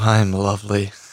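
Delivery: depressed-sounding, glum, dejected, downbeat tone. Asked by the hosts how he's doing, answering, sounding depressed. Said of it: "he just sounds so like depressing".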